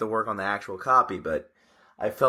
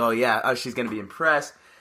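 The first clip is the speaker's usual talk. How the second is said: normal talking voice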